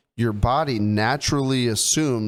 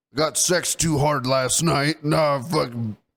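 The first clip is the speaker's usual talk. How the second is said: put-on old man voice. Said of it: "you act like you're so fucking old".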